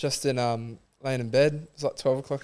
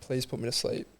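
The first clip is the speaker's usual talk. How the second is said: put-on pleading voice, quieter; 7 dB quieter than usual. Retelling how they kept begging at the end: imitating own begging. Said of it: "I was, like, begging".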